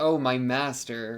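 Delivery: put-on mocking sarcastic tone. Describing a character who depends on him and mocks him, retelling a mocking 'my master'. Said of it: "she's mockingly saying".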